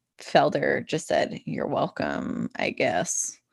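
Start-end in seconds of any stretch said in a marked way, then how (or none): 1.5-3.3 mock-sassy under-breath mutter, much lower. Speaker retelling a man's reply to a senator's wife, retelling a sassy mutter. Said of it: "like really under his breath, and was like very sassy about it".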